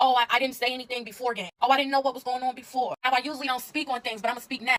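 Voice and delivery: ordinary talk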